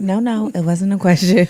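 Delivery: cold, flat commanding voice. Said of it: "Miranda Priestley, where she talks like this".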